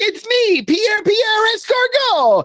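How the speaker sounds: very high, slow, drawn-out put-on French voice. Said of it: "what's the character in All That?".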